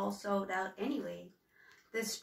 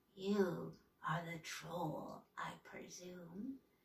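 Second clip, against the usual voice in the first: slow, soft, raspy voice, words drawn out; 3 semitones lower, 8 dB quieter than usual. Narrator reads a woman's line to Humboldt across a shop counter, raspy voice. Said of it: "said in a raspy voice".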